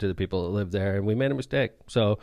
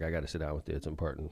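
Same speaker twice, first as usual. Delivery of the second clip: mock worried tone, lower and quieter; 6 semitones lower, 11 dB quieter than usual. Retelling what a friend said at lunch: imitating a concerned friend. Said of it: "And he's super, like, concerned".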